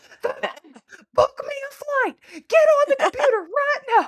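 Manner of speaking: very high, loud, panicked, frantic screaming. Recalling a woman's reaction to the news, imitating her frantic screaming. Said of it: "you're screaming frantically".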